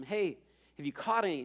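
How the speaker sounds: normal talking voice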